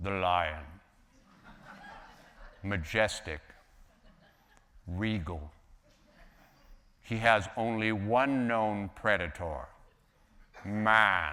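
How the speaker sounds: very deep, slow, unhurried basso profundo voice. Recalling a nature show about lions, deep basso profundo Lorne Greene. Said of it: "he spoke in this very deep, very deep basso profundo voice".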